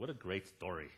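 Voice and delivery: dry, mocking sarcastic tone. Retelling a husband's reply to a grandma in a movie: imitating a sarcastic remark.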